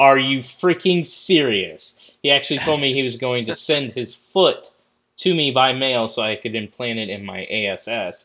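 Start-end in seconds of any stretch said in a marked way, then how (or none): 0.0-1.9 mock fed-up, furious, exasperated disbelief. Retelling how someone reacted to a question, retelling an angry outburst. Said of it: "Kent get so pissed".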